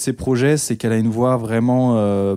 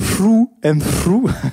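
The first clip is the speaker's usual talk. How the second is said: horrible fake American accent, pitched up; 8 semitones higher, 4 dB louder than usual. Presenting an American artist's album title in English: horrible American accent. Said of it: "genre mon accent américain horrible".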